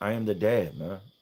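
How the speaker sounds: normal talking voice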